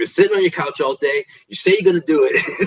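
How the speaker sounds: mock angry, scolding, lecturing pitchman ad voice. Speaker describes a Phoenix commercial, doing the pissed-off guy mock-angrily. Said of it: "when the guy's like pissed off".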